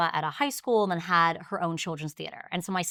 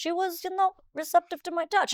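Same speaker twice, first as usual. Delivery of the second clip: put-on older Italian man's accent, pitched very high; 12 semitones higher than usual. Retelling what an older Italian man told the speaker, in an older Italian man's accent. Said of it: "a older Italian man with an Italian accent".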